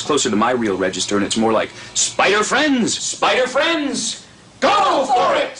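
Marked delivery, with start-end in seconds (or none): 1.9-5.6 take-charge hero voice, much higher pitch, slower. Describing a role, the speaker shows how the character sounds as Spider-Man: take-charge Spider-Man voice. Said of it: "he becomes a take-charge sort of guy".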